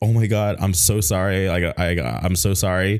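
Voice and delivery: put-on flustered, freaked-out, panicked voice, drawn out. Retelling apologizing after a handshake seemed to hurt her: retelling own panicked apology. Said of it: "freaking out and I was like".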